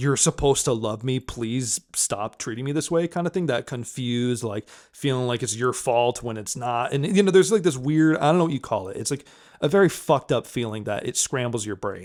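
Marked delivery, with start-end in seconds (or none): 0.0-3.1 acted, desperate tone. Acting out the inner voice of someone being yelled at: imitating a desperate plea. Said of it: "reverted to that desperate".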